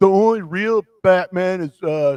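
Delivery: high, loud, mock eager, insistent voice.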